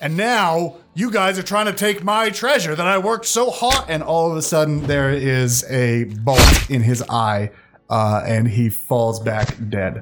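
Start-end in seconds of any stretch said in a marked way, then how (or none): 0.0-3.9 angry rant, climbing higher in pitch, growing angrier. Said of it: "angrier than ever".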